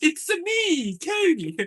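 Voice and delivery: high, swooping, sing-song cartoon voice. A speaker shows off a Mario impression mid-conversation: Mario impression. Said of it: "I do got a good Mario impression".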